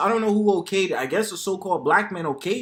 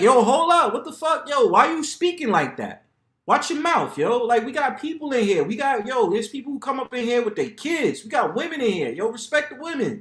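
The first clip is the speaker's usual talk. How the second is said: put-on, reproachful, scolding tone; 4 semitones higher than usual. Acting out how a barbershop regular would check someone talking that way: imitating a barber checking someone. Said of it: "Dude's gonna be like".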